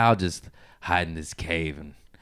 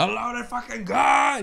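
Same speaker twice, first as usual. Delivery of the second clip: put-on scream, much higher in pitch and slower. Retelling a man finding a loaded gun in his bag, put-on Sam Kinison-style scream. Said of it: "he just starts screaming".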